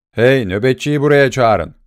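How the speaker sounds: ordinary delivery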